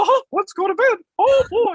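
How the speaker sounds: very high, loud squeaky voice. Describing a late night after a drink or two, switching to a Mickey Mouse voice. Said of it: "then it's on to Mickey, and I'm like".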